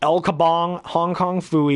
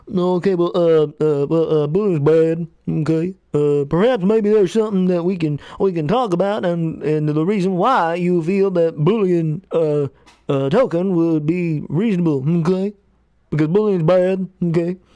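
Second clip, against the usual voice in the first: put-on nasal character voice. Doing a series of cartoon impressions: Mister Mackey voice. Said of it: "Mister Mackey".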